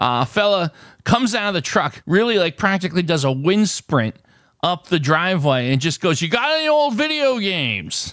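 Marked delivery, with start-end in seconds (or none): 6.2-8.1 aggressive and overpowering, high and swooping. Retelling a big man who rushed up a driveway, imitating an aggressive, overpowering man. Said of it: "it was just so aggressive and overpowering".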